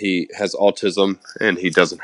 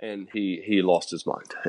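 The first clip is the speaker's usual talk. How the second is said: normal talking voice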